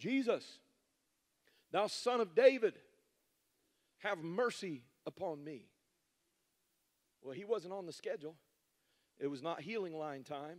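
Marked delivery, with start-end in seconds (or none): 0.0-5.7 loud, slow, drawn-out shout. Telling a bible story, the speaker acts out a bystander's cry: retelling a shout. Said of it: "lifts up their voice and begins to shout out".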